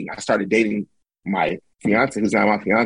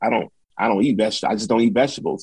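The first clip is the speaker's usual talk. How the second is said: normal talking voice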